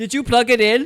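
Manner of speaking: very loud, high-pitched, put-on Indian accent. Imitating an IT guy from India asking a question: put-on Indian accent. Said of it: "they would have asked first in that accent".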